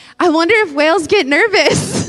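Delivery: loud, far-carrying musing out loud. Retelling a remark made in a stadium: retelling saying it loudly. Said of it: "said so loud in a stadium".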